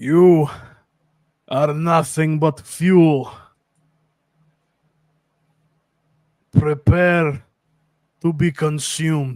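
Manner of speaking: loud, slow orc voice speaking broken Common. Voicing an orc who threatens the player: orc speaking broken Common. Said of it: "speaks in broken common".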